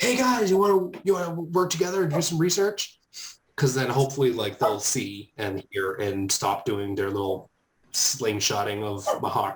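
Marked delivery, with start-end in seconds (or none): 0.0-3.0 very high, open, full shout. A player calls out to the others to work together, yelling out. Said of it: "I wanna yell out to them".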